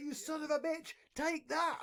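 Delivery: very high, excited, drawn-out screaming yell. Retelling playing a card game and getting excited: imitating screaming at the screen. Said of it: "I start screaming at the screen".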